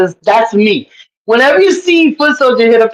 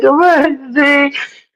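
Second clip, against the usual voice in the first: put-on tearful, whiny, pleading, crying whimper; 3 semitones higher than usual. Imitating a friend crying on the panel: imitating someone crying. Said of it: "you be on the panel crying".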